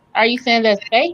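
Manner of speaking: sarcastic delivery.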